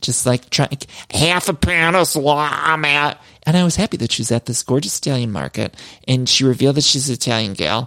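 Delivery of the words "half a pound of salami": put-on mushy, thick-mouthed peanut-butter voice, much slower. Describing a woman ordering at the deli, the speaker imitates her mouthful-of-peanut-butter voice. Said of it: "a mouthful of peanut butter trying to get".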